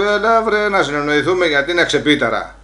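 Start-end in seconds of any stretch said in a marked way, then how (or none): none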